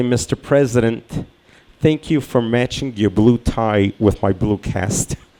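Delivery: normal talking voice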